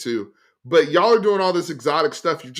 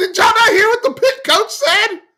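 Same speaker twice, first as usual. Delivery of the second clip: very high, loud, raised yell; 7 dB louder than usual. Speaking to the others in a sports discussion, raised voice. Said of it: "I didn't mean to raise my voice".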